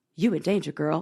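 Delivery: blunt, straight-talking, no-nonsense tone. Retelling the movie scene: Whoopi Goldberg voice. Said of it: "she's like, "I'm not gonna tell her that. I'm gonna say it in my way."".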